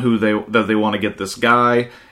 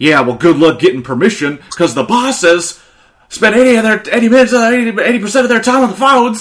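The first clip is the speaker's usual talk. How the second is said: acted-out upset rant, much higher, louder; 10 semitones higher, 4 dB louder than usual. Recapping a TV episode, acting out a character's complaint, mock-upset rant. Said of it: "he's getting all upset and stupid about it".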